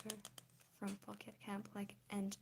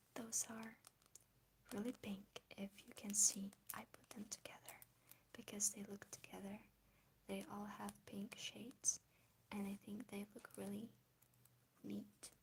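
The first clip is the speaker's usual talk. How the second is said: quiet voice, much quieter than before; 4 dB quieter than usual. Showing a listener a card collection, in a quiet voice. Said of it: "I can speak in a quiet voice".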